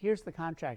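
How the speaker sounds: usual speaking voice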